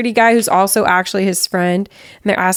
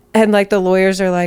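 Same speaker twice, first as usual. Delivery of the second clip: usual speaking voice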